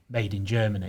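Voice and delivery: ordinary talk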